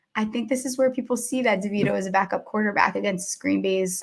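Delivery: low, quiet voice. Feeling bad about talking trash, the speaker says this in a lowered voice. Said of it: "I lowered my voice".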